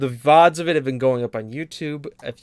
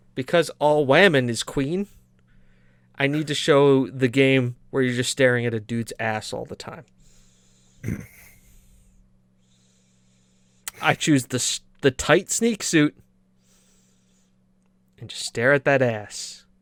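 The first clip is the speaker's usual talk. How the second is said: thick, heavy, dripping, very sarcastic delivery. Explaining which game will be streamed and why: very sarcastic. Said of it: "I'm going to be very sartas-, sarcastic here".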